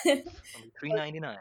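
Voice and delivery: mock commercial advertisement voice. Answering a request to show how to advertise a gym ball: mock commercial voice. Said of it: "how would you advertise it?".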